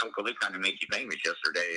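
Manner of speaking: plain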